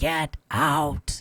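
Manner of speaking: rough raspy voice. Retelling how a voice answered Lucy's question to the room, in a gravelly voice. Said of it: "you hear this gravelly voice saying".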